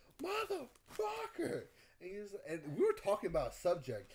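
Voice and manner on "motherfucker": very high, sudden scream. Retelling spinning out onto the grass: imitating own scream. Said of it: "and I just screamed".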